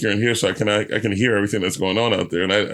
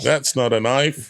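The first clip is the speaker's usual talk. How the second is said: put-on slow, pitched-up Australian accent; 5 semitones higher than usual. Joking about a comedy show, quoting a film line: Australian accent. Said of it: "That is Australian".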